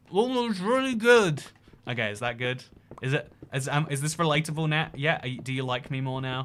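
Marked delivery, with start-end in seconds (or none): 0.1-1.4 higher speech through a full mouth of food. Acting out answering a waiter's "How is it?": acting out talking with mouth full. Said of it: "you've got food in your mouth, so you have to go like".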